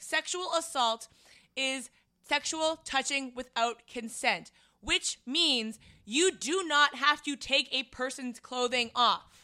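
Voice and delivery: heated, high-pitched yell. Retelling yelling at a man in an empty bar, retelling a yell. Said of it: "And I just stopped yelling".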